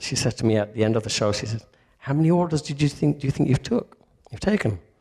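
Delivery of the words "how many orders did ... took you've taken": put-on Sunderland-accented speech. Retelling what a woman from Sunderland asked him after the show, in a put-on Sunderland accent. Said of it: "put on her accent".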